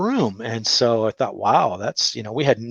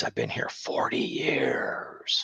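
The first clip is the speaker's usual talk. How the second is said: slow, creepy, eerie ghostly whisper; 11 semitones lower, 10 dB quieter than usual. Retelling a woman they met during an investigation, in a creepy voice. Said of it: "She had this creepy voice".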